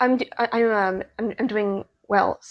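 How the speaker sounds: soft, halting stutter on the first words. A guest who just joined the call answers how they are doing, stuttering. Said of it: "Sorry about the st- st- stuttering".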